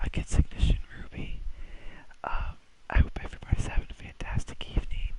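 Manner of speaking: put-on soft ASMR voice. Opening the match commentary as a joke: mock ASMR voice. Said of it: "We're gonna do an A S M R tonight".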